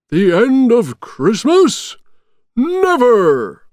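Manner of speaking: very high, loud shout. Narrator reads a character's reply to another character, shouted. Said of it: "shouted Santa".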